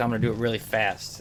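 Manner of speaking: ordinary talk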